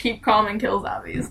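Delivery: ordinary talk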